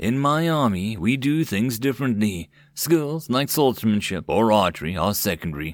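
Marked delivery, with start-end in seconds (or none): none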